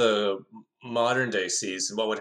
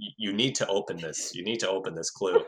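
put-on deadpan, flat delivery. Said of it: "with such a straight face".

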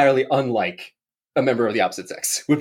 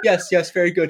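put-on snooty waiter voice, higher pitch; 4 semitones higher than usual. Retelling a movie scene where the waiter pops a bottle: imitating Steve Martin's waiter. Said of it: "And he goes".

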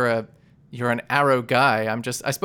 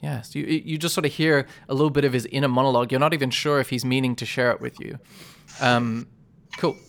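ordinary delivery

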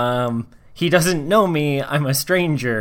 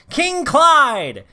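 very high, super loud, proclaiming yell; 12 semitones higher than usual. Grabbing two companions, the character runs over to Clyde, yelling super loudly. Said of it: "super loudly I yell".

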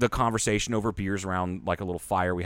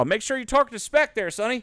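southern drawl pitched way up. Imagining him coming back up the steps with advice about torque, in a Carroll Shelby southern drawl. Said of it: "go in that southern drawl".

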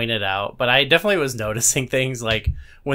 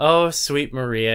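tearful, weeping, crying voice; 2 semitones higher than usual. Retelling a scene where the priest answers Maria: imitating someone crying. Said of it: "and he's crying".

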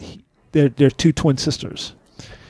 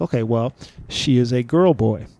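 ordinary talk, nothing marked

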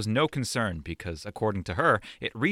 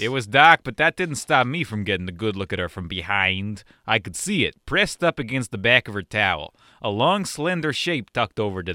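put-on Chicago accent; 4 dB louder than usual. Reading a story passage aloud on request, in a put-on chicago accent. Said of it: "I'll do a Chicago".

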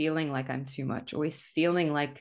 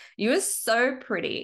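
acted-out drunk voice, slow, drawn-out and high; 8 semitones higher, 3 dB louder than usual. Imitating her past self talking drunk on a recorded phone update: imitating her own drunk voice. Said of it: "this is exactly how I sounded".

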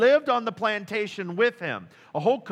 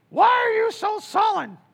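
shrill, loud, high, grating nagging tone; 13 semitones higher, 6 dB louder than usual. Reading a Bible verse aloud, Jezebel questioning her husband: grating Jezebel voice. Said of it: "a voice that would just grate on your nerves".

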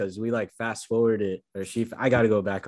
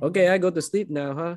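put-on high-pitched old woman's voice with Filipino accent; 8 semitones higher than usual. Retelling a funny movie scene with a grandma: imitating a Filipino grandma's way of talking. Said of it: "just the way she was talking when she was like".

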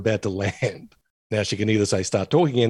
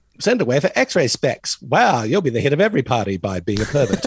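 swooping, animated comic voice with pitch swinging widely; 3 semitones higher than usual. Joking about x-ray specs ads: Jon Lovitz voice. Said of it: "John Lovitz has become my default voice".

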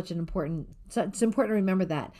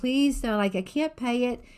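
mock high, pleading, begging-for-mercy tone; 6 semitones higher than usual. Retelling how a debtor facing jail pleaded, with mock begging. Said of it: "And so he's begging".

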